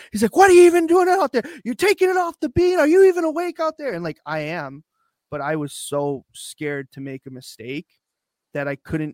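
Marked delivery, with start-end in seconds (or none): 0.4-4.0 very high, very loud, shrill, rattled-off screaming. Speaker retells his coach looking at him and yelling; retelling a coach's screaming. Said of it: "he just starts screaming".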